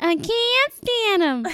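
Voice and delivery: very high, put-on female voice. Asked what she says, you repeat her words in an attempt at her voice. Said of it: "that was my attempt at her voice".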